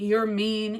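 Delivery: ordinary talk, nothing marked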